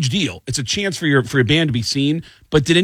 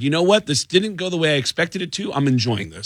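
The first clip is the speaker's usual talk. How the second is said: normal talking voice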